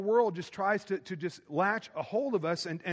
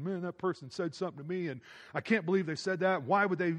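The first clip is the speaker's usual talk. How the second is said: normal talking voice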